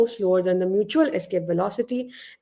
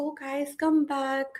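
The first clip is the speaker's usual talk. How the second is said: very weak, faint, feeble, soft voice; 6 semitones higher, 6 dB quieter than usual. Acting out a teacher calling running students back, very weak voice. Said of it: "in like a very weak voice".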